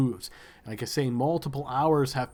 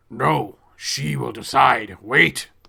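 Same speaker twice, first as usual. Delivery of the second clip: rough, booming, very slow, commanding voice; 7 dB louder than usual. A storyteller voices a figure calling out to the players: booming voice. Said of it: "calls out in this booming voice".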